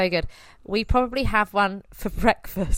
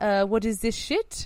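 slow, terrible fake French accent. Quoting people reacting to corn on the cob, in a terrible french accent. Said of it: "this is my terrible French accent".

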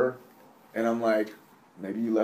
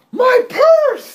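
very high, very loud, shrill, wild scream; 15 dB louder than usual. Telling the story of an old lady in a movie theater: retelling a crazy-loud scream. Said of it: "She screams out".

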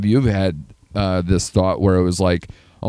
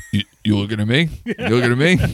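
put-on baby voice, higher; 4 semitones higher than usual. Imagining a baby version of De Niro in a film: Baby De Niro voice. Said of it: "they do Baby De Niro".

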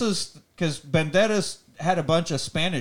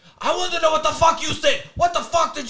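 put-on scream, higher pitch; 12 semitones higher, 3 dB louder than usual. Retelling how a man confronts a woman at a bookstore: imitating someone screaming. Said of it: "he is screaming at her".

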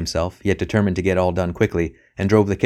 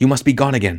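whispered, much higher pitch; 4 semitones higher than usual. Narrator reading a woman speaking low to him at the far end of the hall, whispered. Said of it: "she whispered".

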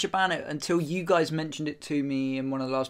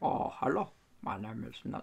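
breathy, hushed, put-on voice; 3 semitones lower, 9 dB quieter than usual. Offering to read something in the Mandela voice: Nelson Mandela voice. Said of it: "Do you want me to read it in the Mandela voice?".

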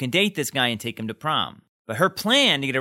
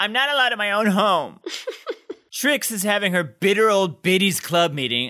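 high, disdainful, condescending blurt, acted out; 7 semitones higher than usual. Recapping a scene, quoting Emily: imitating Emily blurting it out. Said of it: "blurts out".

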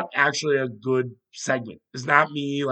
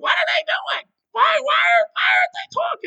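awful, terrible, very high, squeaky sports-host voice; 4 dB louder than usual. Imagining a sports TV reaction, awful Mad Dog impression. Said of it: "That's an awful Mad Dog impression".

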